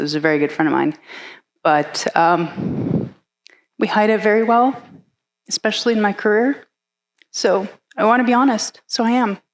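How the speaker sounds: voice choked with tears. Talking about a colleague's suicide, tearing up. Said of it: "sorry, I'm gonna tear up over this".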